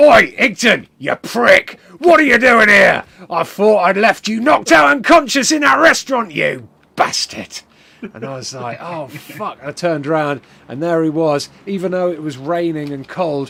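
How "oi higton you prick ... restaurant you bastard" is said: put-on very loud, high-pitched, shouting Cockney accent. Asked what Cockney sounds like, showing it: Cockney accent. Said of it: "What's Cockney?".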